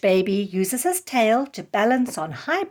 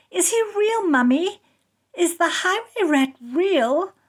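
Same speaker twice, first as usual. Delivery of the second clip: put-on small, high, frightened little-girl voice; 8 semitones higher than usual. At bedtime after a story, a little girl asks her mother in a scared little voice. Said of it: "asks in a scared little voice".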